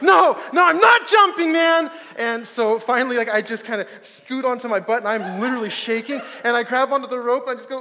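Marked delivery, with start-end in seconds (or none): 0.0-1.9 put-on very loud, high, hyperventilating, panicked pleading. Retelling his refusal to jump, the speaker is acting out hyperventilating. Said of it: "I'm hyperventilating".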